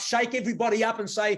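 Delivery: ordinary talk, nothing marked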